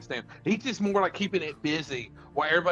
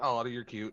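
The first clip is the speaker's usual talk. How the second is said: dismissive, amused little laugh chuckled through words; 5 semitones lower, 4 dB quieter than usual. Voicing a character who shrugs off a goblin's stab: chuckling, amused. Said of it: "he's just chuckling, he's like".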